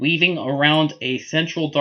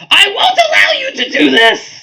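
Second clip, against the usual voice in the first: very high, very loud, slow, swooping shrill scream; 10 dB louder than usual. The narrator voices the Queen of Darkness screaming at the party, in Goblin King voice. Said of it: "I was still in Goblin King voice".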